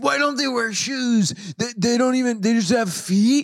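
very high, mad, indignant ranting voice. Retelling what Olivia said in an earlier talk: imitating Olivia, mock mad. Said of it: "That's a good impression of me".

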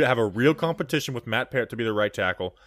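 usual speaking voice

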